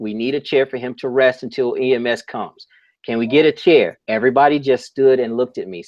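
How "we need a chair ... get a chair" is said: ordinary delivery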